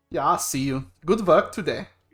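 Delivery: put-on German accent, character voice. Voicing a character ending a conversation, the performer uses a German accent. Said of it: "Why am I German?".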